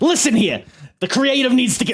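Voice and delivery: very high, shrill, loud wrestling podcaster voice. Playing up the voice another speaker compared to a wrestling podcaster: imitating an IWC podcaster. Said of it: "You sound like a, uh, podcaster in the I W C".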